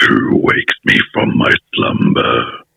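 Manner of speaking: drawn-out, rough and creaky voice. Answering which characters to voice, quoting the line: Cave of Wonders voice. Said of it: "The Cave of Wonders is like".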